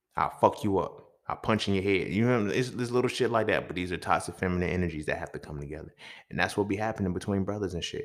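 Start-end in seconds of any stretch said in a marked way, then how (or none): 0.2-2.2 mock aggressive, threatening tough-guy voice. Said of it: "the other side was like".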